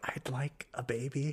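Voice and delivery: hushed, very soft, slow, drawn-out, bashful voice. Retelling a movie scene, imitating sheepish Papa Elf. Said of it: "sheepishly chimes up".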